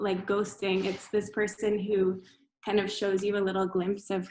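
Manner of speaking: ordinary delivery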